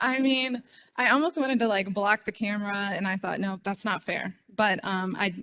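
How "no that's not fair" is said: ordinary delivery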